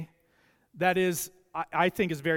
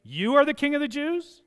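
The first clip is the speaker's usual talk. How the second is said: disbelieving, incredulous up-talk, pitch rising on key word; 7 semitones higher, 3 dB louder than usual. Speaker demonstrates the original intonation of a quoted question, incredulous and rising. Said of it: "it's a question based on the intonation".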